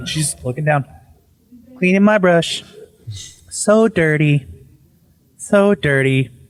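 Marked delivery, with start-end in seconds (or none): 1.8-6.3 slow, unbothered, nonchalant, calm drawl. Retelling a wife's eerie words: imitating someone slow and nonchalant. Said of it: "slowly, like, just, like, nothing's wrong, nonchalant".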